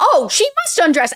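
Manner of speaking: high, bombastic, presumptuous pronouncement, acted out. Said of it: "the way she, he says it".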